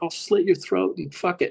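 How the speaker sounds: put-on furious, high-pitched voice. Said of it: "He sounded like [name] from Slipknot when he gets pissed".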